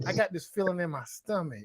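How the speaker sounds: alluring, enticing come-hither voice. Retelling the setup line she said to him: imitating an alluring voice. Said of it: "she said it in that voice that gets you all excited".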